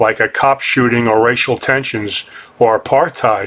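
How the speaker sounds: ordinary delivery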